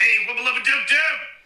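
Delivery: loud, way up high cartoon voice. Showing a Rick impression that only works when loud. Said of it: "when I speak loudly like this".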